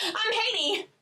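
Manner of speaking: put-on perky, very high, bright-eyed chirpy voice, Haitian accent. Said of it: "she's like".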